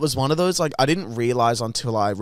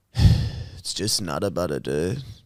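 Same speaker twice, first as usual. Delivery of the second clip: put-on flat, chill, deadpan tone, lower; 6 semitones lower than usual. Retelling how a shop worker answered a question: imitating a flat, chill reply. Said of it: "stone and kinda, like, chill".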